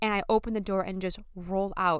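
normal talking voice

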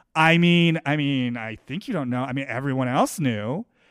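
low, muttered, passive-aggressive aside. Recounting one woman's remark to another amid crosstalk, imitating a muttered aside. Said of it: "sort of also muttering under her breath".

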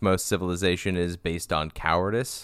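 ordinary delivery

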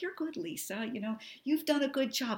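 put-on quiet, hushed grandma voice. Acting out a grandma figure's praise from the corner, imitating a quiet grandma. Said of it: "but her voice is so quiet".

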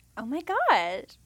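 put-on Valley Girl accent, high and loud. Trying out a california accent, in a valley girl voice. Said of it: "Kind of like the Valley Girl voice".

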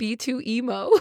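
very slow, crying with laughter. Telling another speaker about a droid's full name, laughing while talking. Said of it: "crying, laughing, trying to tell me this".

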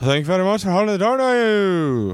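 put-on very high British accent, "you" stretched out. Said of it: "Irish, doing a British accent".

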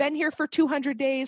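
high-pitched, wry, dry tone.

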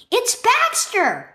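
sudden, high, lifted storybook-style exclamation. A girl hears her dog yipping and runs to the window; exclaimed. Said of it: "Naya exclaimed".

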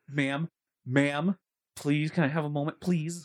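put-on polite, pleading voice. Imitating another speaker who asked for a moment: mock polite plea. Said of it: "Don't talk to me like that".

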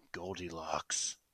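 put-on deadpan, low, totally straight and dead serious. Acting out answering someone while staring them in the face: mad serious. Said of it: "mad serious".

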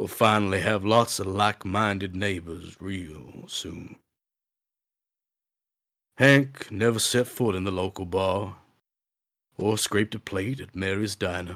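luxurious, rich storytelling narrator voice. Reading a story aloud to listeners: Sam Elliott-like voice. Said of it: "like Sam Elliott incarnate".

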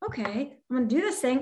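mock composed, settled calm voice, all worry gone. Speaker acting out their past self after writing a post-it note, retelling own calm voice. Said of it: "you can hear it in my voice, like this calmness".

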